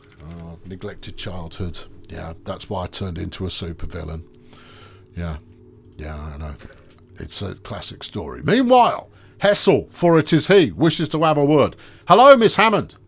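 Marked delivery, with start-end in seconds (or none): 12.1-12.8 put-on loud, booming, heavy, obvious German accent. Retelling a story, voicing Hessel as he greets a woman, obvious German accent. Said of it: "he says in his very obvious German accent".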